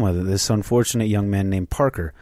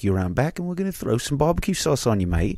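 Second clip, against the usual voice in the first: Australian accent, higher and faster; 5 semitones higher than usual. Mid-bit, the speaker's accent drifts from England to Australia: Australian accent. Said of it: "I went from England down to Australia with that accent there".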